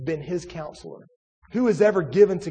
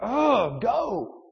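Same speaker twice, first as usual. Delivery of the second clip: short, fed-up, impatient growl, pitched higher; 5 semitones higher than usual. Preacher retelling how he growled at someone who wouldn't go, retelling a growl. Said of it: "I growled at them, like just like that".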